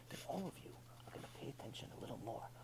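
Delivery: hushed, breathy, very quiet whisper. A speaker showing an audience how whispering draws attention, whispering. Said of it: "But if I start whispering".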